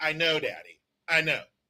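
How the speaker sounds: put-on young girl voice, rote, as if said many times. Imitating a ten-year-old daughter answering her father: imitating his ten-year-old daughter. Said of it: "she's gonna mouth the words".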